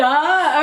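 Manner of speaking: high, loud laughing. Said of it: "Gotta stop laughing".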